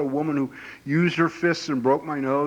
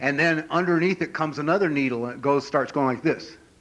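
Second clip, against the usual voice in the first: ordinary delivery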